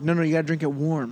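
ordinary talk

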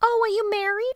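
put-on very high Queens-accented voice. Acting out a movie scene as Queenie: Queenie voice, Queens accent. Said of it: "Queenie from, I'm guessing, Queens".

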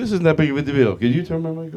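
mock pompous, self-important tone. Retelling own past request to a sound guy: imitating own pompous manner. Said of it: "I'm so pompous. I go".

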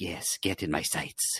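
a bit crazy, unhinged voice. Describing a cartoon's clones, imitating Crosshair. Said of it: "the crazy Crosshair guy who's like".

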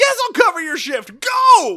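very loud, high-pitched shouting. Retelling how Barney yells at Andy to leave: imitating Barney yelling. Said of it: "Barney yells".

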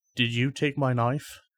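in-character whisper. Playing a character asking another character about a missing knife: in-character whisper. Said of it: "going to go over to Kai and whisper".

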